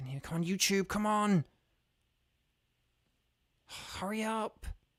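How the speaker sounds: high, frantic, freaked-out pleading. Urging a stalled stream to start, frantic and freaking out. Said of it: "sorry if you guys can just hear me, like, freaking out".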